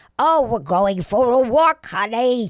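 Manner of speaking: put-on very loud little old lady voice. Showing an extra voice they ask him to do: a little old lady voice. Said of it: "can you handle this like this little old lady?".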